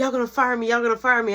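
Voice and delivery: frantic, fast, rattled-off panicked babble. Retelling a coworker's reaction after a kitchen mess: imitating someone panicking. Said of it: "He straight panicking".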